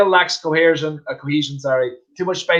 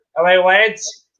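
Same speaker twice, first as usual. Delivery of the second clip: put-on South African accent; 4 semitones higher, 4 dB louder than usual. Reading out a viewer's comment to the audience: put-on South African accent. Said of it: "That's my South African accent".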